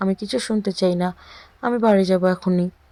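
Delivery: ordinary delivery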